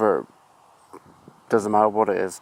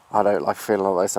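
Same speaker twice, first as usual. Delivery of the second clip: normal talking voice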